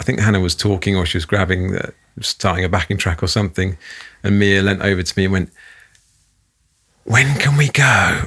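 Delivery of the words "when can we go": plain, not whispered, high and slow. Retelling how she leaned over during a lesson, in a not-whispered voice. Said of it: "in a really not whispered voice".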